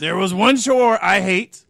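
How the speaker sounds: loud, put-on mock growl.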